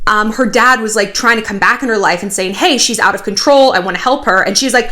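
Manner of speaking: ordinary talk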